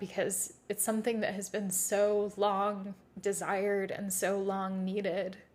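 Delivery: voice catching, choked up with emotion. Reflecting years later on a wild phase of life: choked up. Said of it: "I'm getting choked up".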